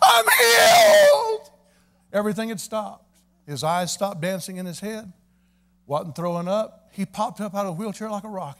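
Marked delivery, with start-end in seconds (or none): 0.0-1.5 put-on childlike scream, very high and very loud. Retelling a man popping up out of his wheelchair: retelling a high shrieking scream. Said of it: "He screamed it in a high tenor voice, like a little kid shrieking".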